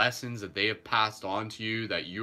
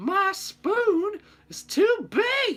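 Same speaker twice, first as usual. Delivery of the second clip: very high, very slow, swooping cartoon voice, every word stretched; 7 dB louder than usual. Quoting another cartoon line after the banana bit: Rejected cartoon voice. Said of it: "that's a pretty good impersonation".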